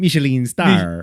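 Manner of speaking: fake put-on Italian accent. Joking about european cooks in card games: put-on italian accent. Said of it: "That was Italian".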